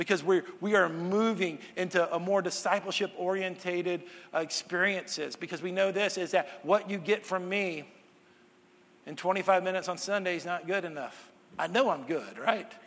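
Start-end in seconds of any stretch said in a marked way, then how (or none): 11.6-12.7 sarcastic, ironic, tongue-in-cheek, tossed-off delivery. Joking to the congregation about the sermon's length: sarcastic. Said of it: "Sarcasm if you're listening to this on podcast".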